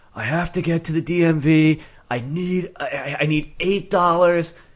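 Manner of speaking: put-on half crying. Retelling a man on the Boston T asking for money, imitating someone half crying. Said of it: "he's like half crying".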